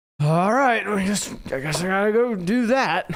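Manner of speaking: put-on grudging, reluctant, very high-pitched, drawn-out voice. Retelling how another speaker agreed to do the show: imitating someone reluctant. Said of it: "And you go".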